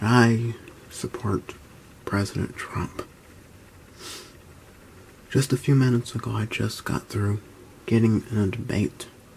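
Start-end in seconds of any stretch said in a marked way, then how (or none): 2.0-3.0 hushed whisper. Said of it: "I'm whispering today".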